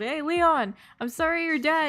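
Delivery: mock very high, slow, drawn-out hollering. Retelling what was yelled at someone named Leon: imitating Azura yelling. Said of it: "Azura literally goes and yells".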